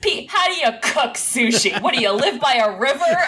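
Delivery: voice dripping with disdain. Retelling a podcast joke about cooking sushi: imitating Jerry's disdain. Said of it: "the most disdain in his voice".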